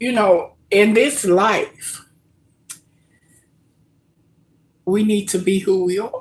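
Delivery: high, teary voice on the verge of crying. Talking to viewers, on the verge of tears. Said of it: "I'm sitting here right now about to tear up".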